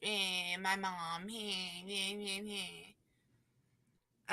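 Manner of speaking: fake, soft, whiny sobbing and whimpering. Retelling a contestant crying on Brooke: mocking whiny crying. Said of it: "cry on Brooke like I'm a little whiny bitch".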